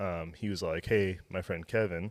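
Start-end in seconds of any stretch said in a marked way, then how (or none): none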